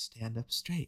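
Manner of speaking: super soft, hushed, soft-spoken voice. Imitating the instructor in a chi running video: imitating a super soft voice. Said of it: "his voice is, like, super soft".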